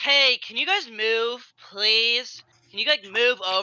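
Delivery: mock, very slow, drawn-out, rude, condescending voice. Imitating how someone asked the group to move, mock-condescending. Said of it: "Condescending. ... Just a really rudely uh, way ... I can do it exactly".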